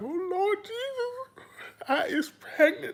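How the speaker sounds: very high-pitched, tearful fake sobbing wail. Mocking someone's tearful retelling of an insult: mock crying. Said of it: "I can't all that crying".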